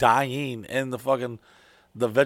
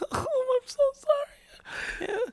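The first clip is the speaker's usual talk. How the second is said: mock crying, much higher and slower; 4 dB quieter than usual. Retelling his girlfriend apologizing after he snapped at her, imitating someone crying. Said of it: "And she started crying".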